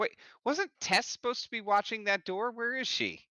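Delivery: yelling, pitched way up. Storyteller voicing a character in the scene, yelling out. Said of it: "he yells out".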